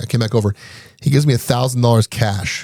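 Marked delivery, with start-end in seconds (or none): none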